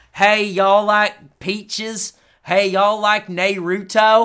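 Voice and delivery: put-on loud, slow, dopey Georgia Southern drawl. Mocking convention-goers in Georgia: mocking Southern accent. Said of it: "you fucking dopey-ass accent".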